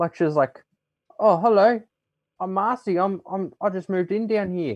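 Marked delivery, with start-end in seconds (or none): 1.2-4.8 put-on high, slow, unhurried full Australian accent. Retelling reading a pink kangaroo's lines aloud; Marcy's Australian accent voice. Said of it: "was doing a real Australian accent when she was talking".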